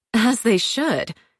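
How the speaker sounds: with an audible sniff. A narrator reading Paige's reply about the suspect, with an audible sniff. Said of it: "Paige audibly sniffed".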